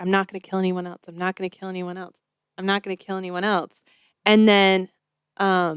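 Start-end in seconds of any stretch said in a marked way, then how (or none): 0.0-3.8 put-on quiet mutter under breath, quieter. Retelling a movie scene where Miles mutters: imitating Miles muttering under his breath. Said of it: "quietly under his breath".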